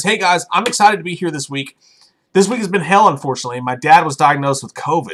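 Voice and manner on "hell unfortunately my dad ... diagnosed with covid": ordinary talk, nothing marked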